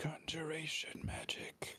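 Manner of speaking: hushed, muttered whisper under the breath. Playing a character who names the magic he just saw: whispering under his breath. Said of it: "will whisper under his breath".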